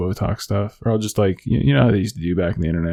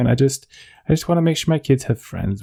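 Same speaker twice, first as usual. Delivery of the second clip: put-on whiny voice, every phrase lifting up; 6 semitones higher than usual. Demonstrating how she has to talk with puffy lips: mock-whiny upspeak. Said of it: "it sounds like I'm whining the whole time".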